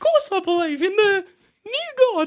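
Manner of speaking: very high, terrified, scared-stiff character voice. Voicing a captive who was just slammed into glass: terrified NPC voice. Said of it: "he's fucking terrified".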